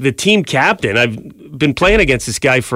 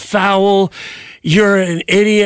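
high, acted-out, angry old-man outburst; 5 semitones higher than usual. Speaker recounts an 80-year-old man in the park, retelling his yelling. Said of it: "starts yelling like just F bombs".

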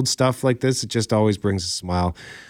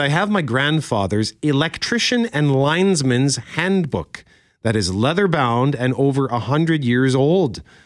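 ordinary talk

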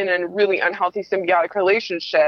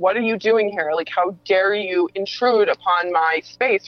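defensive manner. Retelling confronting a parent who showed up unannounced: imitating own defensive words. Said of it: "being very defensive".

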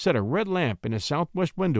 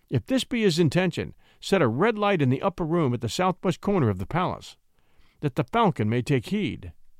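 plain reading voice

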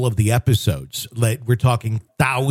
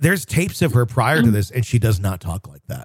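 ordinary delivery

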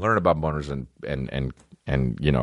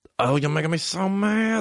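put-on high, squeaky, funny little kid voice. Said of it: "we'd just be like".

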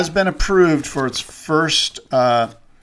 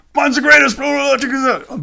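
put-on hype-promoter voice, Australian accent, pitched higher; 11 semitones higher than usual. Imitating a self-promoter who reminds him of Don King: Don King impression with Aussie accent. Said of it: "but with an Aussie accent".

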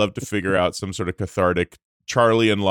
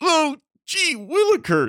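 very high, squeaky, swooping nerdy voice. Trying to recall a show, imitating its nerdy kid: imitating a nerdy kid. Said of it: "the nerdy kid that goes".

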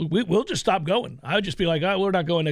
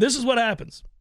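mock, mild, pitched-up small echo of a yell; 5 semitones higher than usual. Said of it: "I was yelling".

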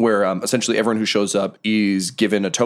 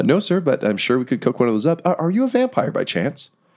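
gently concerned, politely worried, high and sing-song; 5 semitones higher than usual. Voicing a gnome attendant asking a guest if he is a vampire: gently concerned. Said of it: "gently concerned as if she should".

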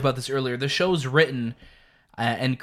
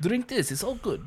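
soft, pitched-up, put-on Russian accent; 7 semitones higher, 8 dB quieter than usual. Co-host joins a joking bit with a russian accent impression. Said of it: "That was my Russian impression".

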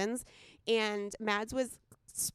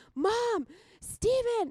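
put-on very shrill, high, loud scream; 14 semitones higher, 6 dB louder than usual. Retelling being headlocked by Maddie in a loft, imitating her screams. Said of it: "And I'm screaming".

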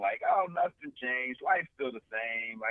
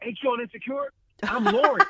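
put-on man yelling, higher and louder; 14 semitones higher, 9 dB louder than usual. Retelling a stranger calling from three checkout aisles away: imitating a man yelling. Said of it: "started yelling".

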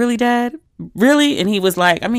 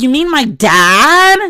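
put-on bratty teen voice, high, loud, very slow, "dad" drawn out; 6 semitones higher, 5 dB louder than usual. Retelling your own reply about your dad, in your most obnoxious teenage voice. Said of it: "I said it in my most obnoxious teenage voice".

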